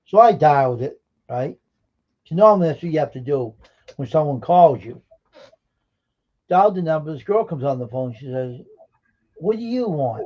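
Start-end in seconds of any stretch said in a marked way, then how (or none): 9.4-10.3 acted-out rude, nasty, sarcastic tone, high-pitched. Retelling a phone call, quoting the woman who answered, imitating a nasty tone. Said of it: "Like nasty".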